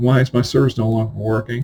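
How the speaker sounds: plain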